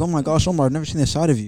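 ordinary talk, nothing marked

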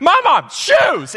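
play-acted very high, thrilled toddler voice. Retelling a daughter's call once her shoes are on: imitating an excited toddler. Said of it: "And she's just so excited".

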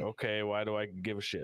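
normal talking voice

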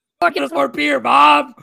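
high, loud, shrill, raspy, demanding, bratty yell. Describing a guy who constantly yells at his mom to get stuff, imitating his yelling. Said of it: "I'm not good at impressions".

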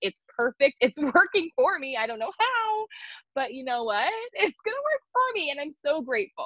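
forced, laughing cheerfulness, high and swooping. Imitating own habit of forcing joy when things fall apart: fake laughing while talking. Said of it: "I will say it like that".

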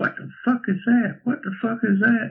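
put-on, very high, shrill, repeated yelling. Retelling how a new guy on the gate started yelling: imitating someone yelling. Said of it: "he started yelling".

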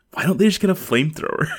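high, sincere, earnest, fed-up exasperation. Recounting someone's suggestion, imitating Steven's earnest exasperation. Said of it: "like Steven voice of like earnest exasperation".

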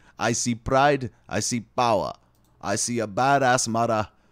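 clumsy, put-on Jamaican accent, loud. Admitting they can't do a Jamaican voice, then trying anyway: bad Jamaican accent. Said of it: "I don't know how to do a Jamaican voice".

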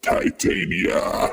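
rough, rasping croak on 'titania'. Narrator voices a death tyrant praying to its goddess: croaked 'Titania'. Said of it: "As it croaks out".

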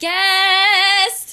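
big dramatic announcing tone. Announcing the special guest together, asked to say it really good: announcing grandly. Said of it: "but you gotta say it, like, you know, really, really good".

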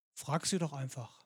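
acted, low, very soft, laconic offhand remark. Retelling what a man answered when asked what to do, retelling a laconic remark. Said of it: "den lapidaren Satz".

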